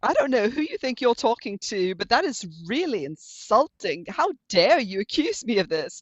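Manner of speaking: put-on sharp-tongued, sassy, indignant delivery. Retelling own reply to a lawyer who suggested AI writing: imitating own sassy reply. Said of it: "I was, like, sassy with him".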